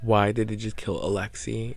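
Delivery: ordinary delivery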